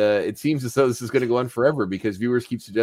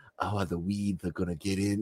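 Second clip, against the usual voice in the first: put-on camp, effeminate Southern accent; 3 semitones lower, 10 dB quieter than usual. Comparing own attempt to a cartoon cousin: King of the Hill Southern cousin voice. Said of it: "effeminate, like, Southern, uh, cousin who's like".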